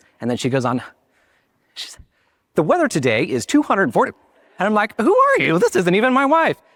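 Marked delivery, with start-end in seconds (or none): 2.5-4.1 broadcast news-anchor announcer reading cadence. Telling viewers how his wife talks on camera, imitating her news-anchor voice. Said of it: "like a news anchor and you have the power".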